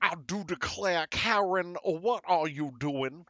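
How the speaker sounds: put-on old-time Southern plantation gentleman voice. Wearing a seersucker suit, playing a character who scolds Karen; Southern plantation gentleman voice. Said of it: "I'm just gonna be like".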